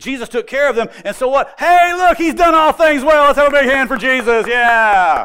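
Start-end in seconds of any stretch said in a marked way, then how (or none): 1.6-4.5 loud, high, showy sportscaster and game-show host voice. A speaker showing a gospel story told in a game show host voice. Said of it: "sounds a little bit more like a sportscaster or a game show host".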